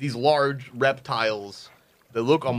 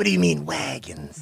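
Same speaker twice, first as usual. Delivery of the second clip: put-on snake voice; 3 semitones higher than usual. A tabletop player voices Paul; snake-like voice. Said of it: "Like a snake".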